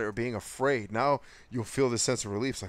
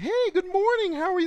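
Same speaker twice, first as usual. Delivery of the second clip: very high pitched voice; 6 dB louder than usual. Mimicking overly nice people greeting someone in the morning, voice way up high. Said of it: "their voice goes up thirty-seven octaves".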